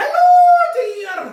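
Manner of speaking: shrill, very high and loud. Answering a viewer's request with an impression: Mrs. Doubtfire voice. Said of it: "Sound like more like Missus Doubtfire".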